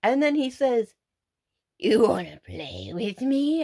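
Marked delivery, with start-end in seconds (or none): 1.8-3.6 menacing, swooping, monstrous creature voice. Retelling an encounter, the speaker quotes his masked foe's reply in a monstrous voice. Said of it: "In a monstrous voice".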